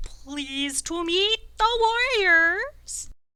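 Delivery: slow warbling royal drawl. Game master voices the Bullywug King greeting the warriors, warbly and slow. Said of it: "begins to talk in a, a warbly voice. He kind of talks slowly".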